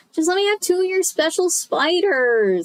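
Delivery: whiny, high-pitched, complaining tone. Narrator reads a line spoken by a voice heard nearby, in a whiny voice. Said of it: "I heard a whiny voice nearby".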